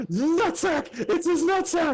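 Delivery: very high, long, drawn-out screech. Retelling a classmate's outburst in class: imitating a scream. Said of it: "he screamed".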